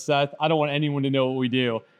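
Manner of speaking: normal talking voice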